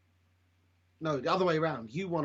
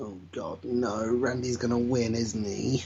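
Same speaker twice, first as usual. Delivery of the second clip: plain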